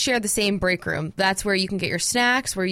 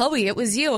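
normal talking voice

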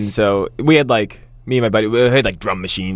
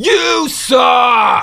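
put-on drunk heckler voice, much higher; 13 semitones higher than usual. Speaker retelling a drunk front-row heckler, impersonating a drunk heckler. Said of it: "Do the impersonation of his voice".

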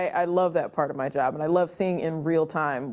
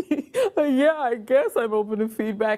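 mock tearful crying, pitched up; 7 semitones higher, 3 dB louder than usual. Retelling answering someone's offer of feedback, imitating speaking through tears. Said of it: "through tears".

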